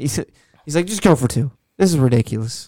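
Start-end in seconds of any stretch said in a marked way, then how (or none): none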